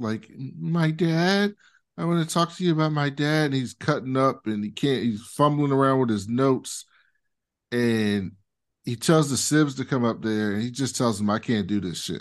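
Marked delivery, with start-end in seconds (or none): 0.6-3.5 put-on childlike voice, pitched higher. Speaker describes Roman starting his dad's eulogy, childlike Roman impression. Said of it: "He sounds like a child".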